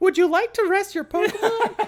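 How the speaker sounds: very high-pitched nurse voice. Riffing on a Pokémon story with a co-host, answering in a Nurse Joy voice. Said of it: "That's a good Nurse Joy voice".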